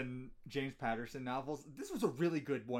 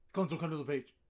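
acted, rushed, too-quick delivery, pitched higher; 3 semitones higher, 4 dB louder than usual. Acting out a director making an actor rush his line: imitating a rushed line delivery. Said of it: "just say it quick".

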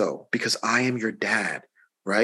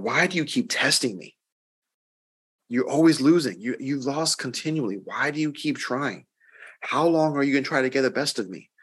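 put-on, fed-up, exasperated tone; 3 semitones higher than usual. Retelling the Bible verse where Jesus is tested, voicing Jesus mock-exasperated. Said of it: "exasperation in his voice".

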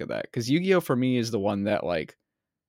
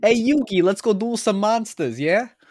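exaggerated bad Brooklyn accent, very high, loud, shrill; 11 semitones higher, 6 dB louder than usual. A fan imitates an English dub voice actor's line; Joey Wheeler bad Brooklyn accent. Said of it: "a bad Brooklyn accent".

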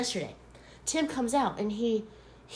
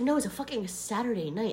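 plain

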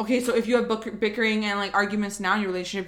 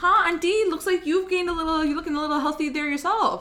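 sugary, fake-nice, pitched-up voice; 7 semitones higher than usual. Acting out a reply to an auntie's remark, in a fake-nice sweet voice. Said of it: "But you say in like a nice voice".

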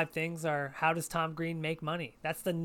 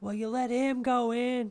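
put-on angry yelling, higher pitch; 7 semitones higher, 4 dB louder than usual. Retelling a man at an animal sanctuary complaining: imitating a man yelling. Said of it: "yelling and carrying on".

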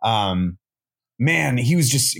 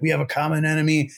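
mock throaty, guttural yelling; 4 semitones higher than usual. Retelling a wrestler rallying the troops: Bray Wyatt guttural yell. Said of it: "it's like a real guttural yell".

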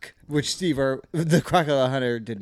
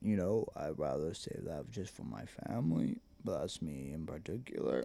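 very low-pitched, very quiet, soft rumble; 9 semitones lower, 15 dB quieter than usual. Answering the other speaker's questions in character: Vin Diesel impression. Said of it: "That's my Vin Diesel".

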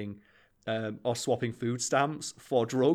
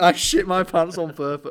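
all-out, loud screaming outburst; 6 semitones higher, 9 dB louder than usual. Retelling Donald Trump's reply the next day: Donald Trump screaming. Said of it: "just screaming".

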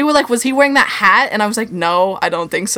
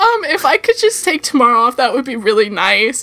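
acted-out choked-up voice, higher; 4 semitones higher than usual. Recounting a reply to the manager, reenacting choking up. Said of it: "I'm like choking up".

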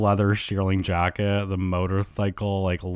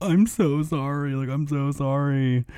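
put-on high, hysterical sobbing through the words; 6 semitones higher than usual. Telling a story about a visitor, acting out Schwartz sobbing hysterically. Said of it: "like sobbing hysterically".

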